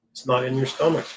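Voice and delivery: normal talking voice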